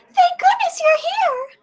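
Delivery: fake falsetto voice. Voicing Princess Peach as Mario arrives, going even higher: very high Princess Peach falsetto. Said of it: "or even higher".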